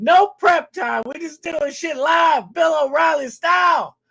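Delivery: excited shouting. Opening a stream with excitement about tonight's guest: yelling. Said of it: "I know I'm yelling".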